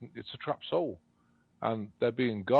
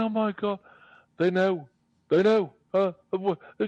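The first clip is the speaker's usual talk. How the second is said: mock crying in robotic voice, higher, louder; 10 semitones higher, 7 dB louder than usual. Retelling a story of an AI lady's voice: imitating it crying. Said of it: "the lady's voice started crying".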